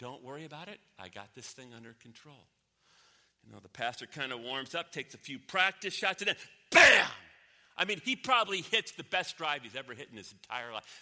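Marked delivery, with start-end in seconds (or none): 0.0-2.4 very quiet, calm, unbothered, hushed and low. Telling a golf joke, the speaker quotes God answering an angel: retelling very calm speech. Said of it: "And God said very calmly".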